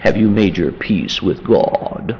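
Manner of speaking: put-on deep, churchly preacher voice. Picturing a man in clergy garb asking a question: put-on deep voice. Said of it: "Deep voice".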